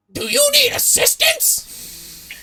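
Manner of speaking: very high, very loud shrieking bird-creature screech. A looming Aarakocra figure approaches from behind and cries out, loud screeching Aarakocra voice. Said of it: "you hear a loud, screeching voice cry out".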